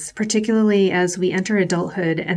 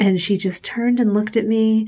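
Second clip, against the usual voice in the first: usual speaking voice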